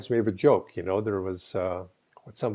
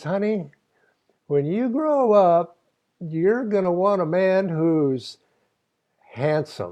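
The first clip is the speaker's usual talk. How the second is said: homespun Texas drawl, pitched up a bit; 8 semitones higher than usual. Quoting a practical mother's advice about choosing a husband, in a Texas accent. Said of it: "I have to sort of say this with a Texas accent".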